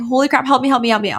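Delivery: put-on freaking out. Retelling their own reaction to what the label says, retelling their own freak-out. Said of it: "I'm freaking out".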